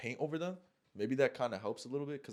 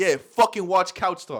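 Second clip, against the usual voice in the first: mock menacing, tough, threatening tough-guy delivery; 6 semitones higher, 15 dB louder than usual. Retelling how he told someone to watch Couch Talks, retelling a tough-guy line. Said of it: "I said it like I had something on me".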